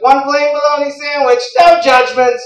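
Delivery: shrill, loud, high shouted yell. Retelling the deli guy announcing the order: imitating someone yelling. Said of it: "He just yells".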